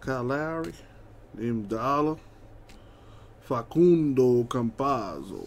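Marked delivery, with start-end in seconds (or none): 3.4-5.5 put-on Italian accent. Reading out a list of names: Italian accent on Facundo Campazzo. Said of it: "I default to the Italian accent on this guy".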